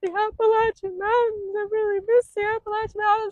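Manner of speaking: acted, very high, loud, tearful sobbing wail. Retelling crossing into north carolina, acting out past self: imitating own past crying. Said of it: "And I was like crying".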